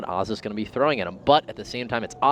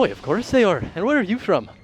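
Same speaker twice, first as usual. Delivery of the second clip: put-on thrown-on Irish accent, pitched up; 8 semitones higher than usual. Retelling answering someone who asked if those were euros; best irish accent. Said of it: "just threw on my best Irish accent".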